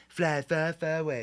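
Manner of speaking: slow, drawn-out character voice, each word stretched. Speaker starting to read Donald Trump's social media post aloud in a Donald Trump voice. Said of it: "I'm gonna read this in Donald Trump voice".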